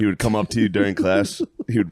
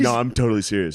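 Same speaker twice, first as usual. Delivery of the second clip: ordinary talk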